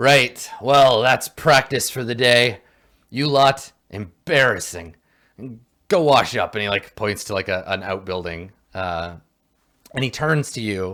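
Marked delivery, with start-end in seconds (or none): 0.0-6.5 loud dwarf character voice. Voicing the dwarf dismissing his trainees after practice: dwarf character voice. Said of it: "the dwarf ... he's like".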